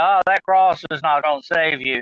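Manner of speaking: plain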